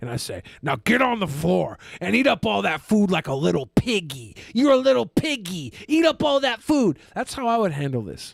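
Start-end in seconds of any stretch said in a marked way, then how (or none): 0.6-6.6 put-on dominant voice, lower. Showing viewers how to handle the situation: Daddy Dom voice. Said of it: "I would do my best Daddy Dom voice".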